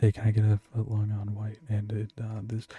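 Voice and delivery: imitated whispering. Retelling customers ordering sandwiches, imitating someone whispering. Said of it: "whisper to me, like".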